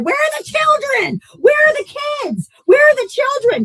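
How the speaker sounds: very high, shrill screaming. Retelling what a group of men did at a door: imitating someone screaming. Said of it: "that are screaming".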